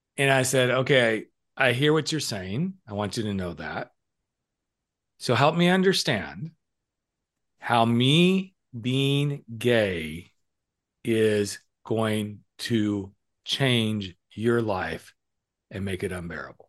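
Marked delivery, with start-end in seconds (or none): 1.6-16.5 mock perfectly calm tone, no heat at all. Speaker retells what they said to their dad during an argument, retelling own calm tone. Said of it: "And I said it just in that tone".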